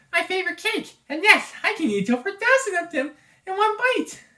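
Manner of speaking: tiny, cute, very high cartoon voice. Voicing Kirby in a story, answering a question: Kirby voice. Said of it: "try my best with the Kirby voice".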